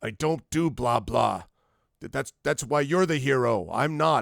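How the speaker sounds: angry, heated, snapping delivery. A narrator voicing a woman's reply to the hero: angry. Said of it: "and she like angrily".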